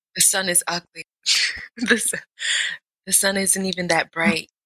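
mean, hushed whisper. Playing Simon says, told to whisper mean things about the sun: whispering. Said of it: "You gotta whisper mean things about the sun".

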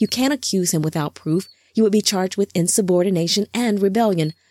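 ordinary delivery

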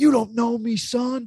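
acted very high, slow, drawn-out yell. Retelling how Goggins, shirt off in the snow and rain, addressed everybody, imitating Goggins yelling. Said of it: "Goggins is yelling like".

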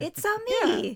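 very high, eager, enthusiastic video-game hero voice. Host starting a bonus episode of impressions, Mario impression. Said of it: "I want to do as many Mario impressions".

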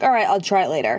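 ordinary delivery

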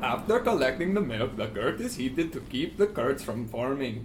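put-on speaking with Swedish accent. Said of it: "this accent".

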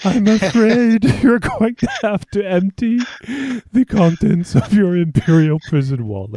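high voice, stifling a laugh, barely straight-faced. Trying the line again in a Thrawn impression, holding back laughter. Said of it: "I can't do it while I'm laughing".

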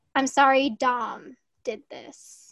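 slow, level, flat, unemotional drone. Retelling an apology video that had no crying: imitating David Dobrik's monotone apology. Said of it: "it was very monotone".

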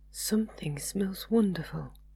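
gentle, soft, hushed, quiet voice. [name], interrupting Martin as he tastes the food, speaking quietly. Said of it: "said [name] quietly".

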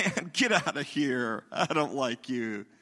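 teasing, messing-around, playful, slow joking tone. Showing how tone changes mean words: playful joking tone. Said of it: "I was just messing around because of my tone".

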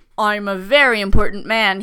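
put-on low, loud, offended older gentleman voice. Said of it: "he told me".

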